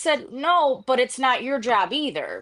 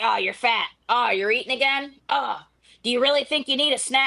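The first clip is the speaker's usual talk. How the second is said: put-on blunt, cutthroat grandfather voice. Retelling what grandpa would say: imitating cutthroat grandpa.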